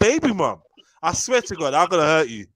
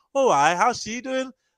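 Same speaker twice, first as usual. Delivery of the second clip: slipping into pitched-up Newcastle accent; 5 semitones higher than usual. Quoting a woman, the speaker tries the listener's accent: Newcastle accent. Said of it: "I've gone Newcastle again".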